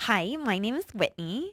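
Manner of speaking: put-on slow, babyish, childlike voice. Asked for an imitation of someone, doing Whitney baby-voice imitation. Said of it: "she has a baby voice. ... That would be my imitation of her".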